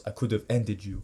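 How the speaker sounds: put-on heavy Portuguese accent. Retelling what a sparring opponent said in the ring, thick Portuguese accent. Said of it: "he has a thick ass Portuguese accent".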